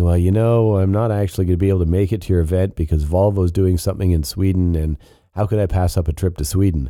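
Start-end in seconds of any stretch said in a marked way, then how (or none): none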